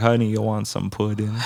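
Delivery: imitated Jamaican accent. Retelling what the lady behind the counter said to him, Jamaican accent. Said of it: "she had the the Jamaican accent".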